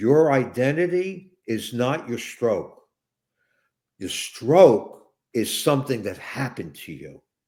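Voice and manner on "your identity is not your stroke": very slow, deliberate, each word placed. Explaining a point to listeners, said real slow. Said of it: "I'm going to say this real slow".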